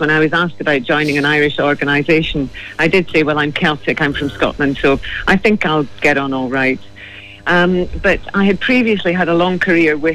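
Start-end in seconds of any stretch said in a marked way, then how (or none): none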